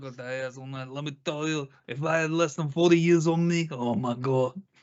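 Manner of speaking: put-on old Italian mafia man voice. Imitating the other speaker's dad, in an old Italian mafia man voice. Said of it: "trying to make him sound like an old Italian mafia man".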